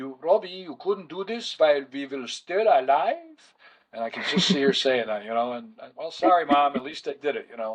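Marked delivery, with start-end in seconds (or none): 0.0-3.2 put-on Hungarian accent. Speaker imitating mom reproaching robbie, hungarian accent. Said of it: "forgive my Hungarian accent".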